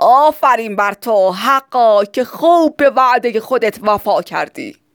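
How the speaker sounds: dense, thick, heavy-toned voice. A character answers the man who turns the poor away, in his thick voice. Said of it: "با صدای کلوفتی که مخصوص خودش بود گفت".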